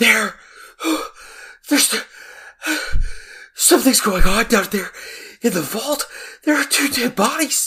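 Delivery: breathless, high, gasping fake panic.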